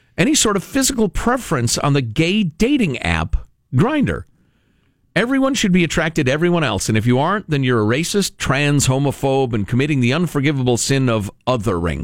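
plain

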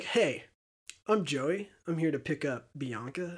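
slow, creepy, not-nice delivery. Imitating Joey arriving to pick up Bianca: creepy Joey voice. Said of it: "he doesn't say it nice".

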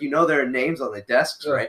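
plain

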